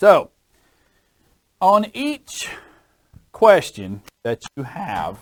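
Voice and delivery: high, halting voice cracking mid-phrase. Explaining a loan example to listeners, voice cracking. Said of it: "a voice crack there for a little bit".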